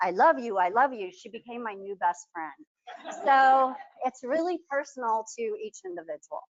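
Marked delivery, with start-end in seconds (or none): 0.0-1.1 loud, raised voice. Retelling the phrase a wife now hears from her husband, in a loud voice. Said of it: "in this loud voice".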